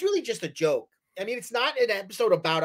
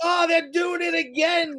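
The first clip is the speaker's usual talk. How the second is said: put-on upset, huffing old man voice, pitched up; 9 semitones higher than usual.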